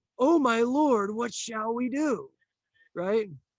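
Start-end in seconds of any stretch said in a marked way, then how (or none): 0.2-2.3 put-on, very slow, drawn-out, high panicked cry. Teaching a lesson, act out Elisha's servant freaking out. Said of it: "he's freaking out, and he's going".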